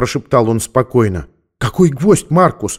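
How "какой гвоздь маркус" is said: surprised, astonished tone with higher pitch. She asks Marcus back, surprised. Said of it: "удивилась она".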